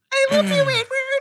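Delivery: overdone, very high, drawn-out put-on female voice. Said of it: "It's so high".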